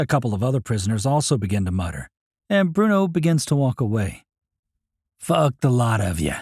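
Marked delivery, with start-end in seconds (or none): 5.2-6.4 hushed voice, lower. Reading a prisoner's line as he walks back to his cell: whispering. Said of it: "he whispers as he walks back".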